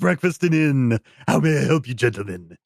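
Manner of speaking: silly high puppet voice. A hotel attendant greets the arriving gentlemen, Muppet-like attendant voice. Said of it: "hotel attendants are some sort of Muppet".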